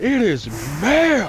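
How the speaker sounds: slow, drawn-out, indignant, offended mock outrage.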